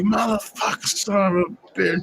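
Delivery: heated, high-pitched, angry cursing and swearing. Retelling a heated argument with the old lady: acting out angry cursing. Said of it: "And I'll be like".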